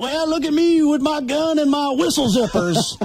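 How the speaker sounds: put-on very high-pitched, phony old-timer prospector accent. Mocking phonies who wear bolo ties, the speaker imitates their fake old prospector accent. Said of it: "the fake phony old prospector accent".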